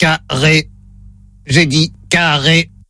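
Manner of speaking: low, flat synthetic robot voice. During a phone-line frequency test, playing the robot that says the word, in robot voice. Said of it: "Voix de robot enclenchée".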